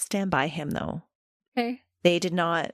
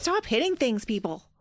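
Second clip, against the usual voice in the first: stern, scolding mother voice; 4 semitones higher than usual. Speaking to the people around during a conversation, in a mom voice. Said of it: "I got the mom voice".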